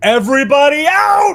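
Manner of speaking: booming, very loud, very high shout. Lorelai finishes a stretch and addresses everybody; Lorelai's loud booming voice. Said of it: "in a really loud booming voice".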